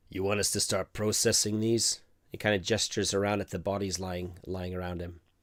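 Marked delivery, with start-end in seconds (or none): 0.1-2.0 heavy bass speaking voice, deep and low, grinding. Narrator voicing a grinder who puts a hand on someone's shoulder, deep voice. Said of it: "kind of says in a deep voice".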